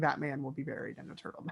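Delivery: fast, hushed, expressionless deadpan near-whisper. Quoting Aurora's line to show the others her delivery, imitating Aurora's deadpan. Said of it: "her delivery, Aurora's deadpan".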